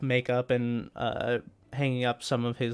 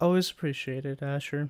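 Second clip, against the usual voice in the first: flat, low-emotion deadpan delivery; 2 semitones higher than usual. Voicing a character who thanks a player: flat, low-emotion delivery. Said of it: "just very low emotion".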